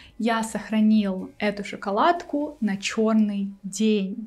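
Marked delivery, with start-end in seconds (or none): none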